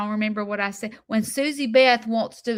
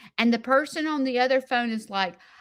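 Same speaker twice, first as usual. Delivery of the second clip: ordinary delivery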